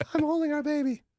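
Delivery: put-on voice pushed very high in pitch. Doing an impression of Lauren after being asked: imitating Lauren. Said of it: "should I do my best, Lauren?".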